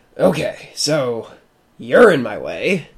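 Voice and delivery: slow, deliberate, drawn-out dragon voice. Voicing Trey, who floats above the three: Trey's voice. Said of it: "that's Trey's voice".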